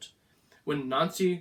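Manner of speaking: ordinary delivery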